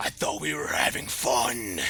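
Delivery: loud demonic voice. Narrating a game, the speaker voices Peggy turning to a player: Peggy's demonic voice. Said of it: "As that demonic voice comes out".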